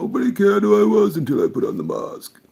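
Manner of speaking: very loud, very high, with big pitch swings. Quoting a line about putting on a mask: Bane voice. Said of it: "trying to do a Bane voice".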